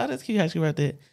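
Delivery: plain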